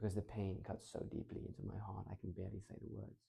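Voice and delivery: deep, very soft, low, hushed voice. Demonstrating voice changes for telling a story, a line in a low voice. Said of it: "Low voice".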